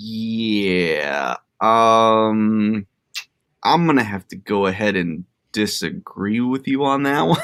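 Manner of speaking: very slow, drawn-out, unhurried um. Retelling a reply to the director on a call: Bill Lumbergh impression. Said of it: "pulled, like, a Bill Lum-, Lumbergh".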